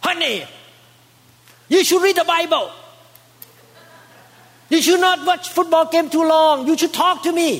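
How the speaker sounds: acted, high-pitched, preachy lecturing wife voice. Acting out a wife lecturing her husband over football: imitating a wife lecturing. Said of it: "you're gonna give a lecture".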